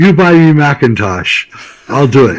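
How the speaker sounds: put-on thick, heavily laid-on Dutch accent. Retelling a man in Amsterdam naming his price for the job, thick accent. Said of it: "he has a real thick accent".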